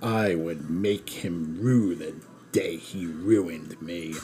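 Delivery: deep, rasping villain voice. Reading aloud a passage from a woman's writing, in Palpatine's voice. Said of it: "I had to do that in Palpatine's voice".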